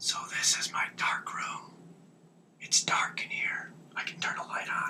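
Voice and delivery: very hushed whisper. Showing the dark room where prints are processed, whispering. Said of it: "I was whispering".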